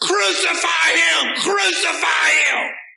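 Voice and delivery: very loud, very high, slow, furious crowd yell. Acting out the crowd from a bible reading: imitating an angry crowd yelling. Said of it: "I'm getting ready to yell".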